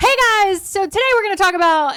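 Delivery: hyped, loud, high-pitched yell. Amanda shows how she used to yell hooks at her phone going live, retelling loud yelling. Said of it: "It's very loud just now".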